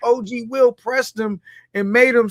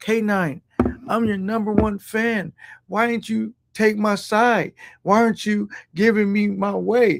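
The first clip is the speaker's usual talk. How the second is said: wounded, heartbroken, pleading, complaining tone; 3 semitones lower, 4 dB quieter than usual. Retelling what a heartbroken fan said to them: imitating someone heartbroken. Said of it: "he was just really so heartbroken 'cause he was like".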